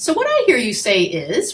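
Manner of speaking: questioning tone, said like a question. Explaining summarizing in listening, demonstrating a questioning tone. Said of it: "I do that in that kind of questioning tone".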